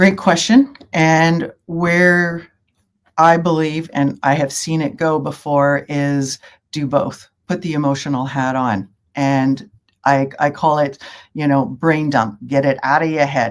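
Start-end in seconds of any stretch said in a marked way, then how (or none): 11.6-13.5 joking, put-on Brooklyn accent. Naming a coaching term as a joke: put-on Brooklyn accent. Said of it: "you gotta say it with a Brooklyn accent".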